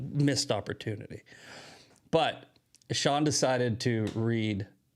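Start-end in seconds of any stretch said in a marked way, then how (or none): none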